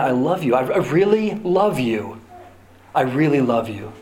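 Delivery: calm, soothing, gentle, comforting voice. Preaching on how God might show up, soft, soothing God voice. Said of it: "A soft, soothing voice that just said over and over again".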